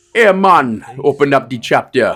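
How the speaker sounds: put-on Jamaican accent. Showing off voices for voice acting work: put-on Jamaican accent. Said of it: "I can do Jamaican".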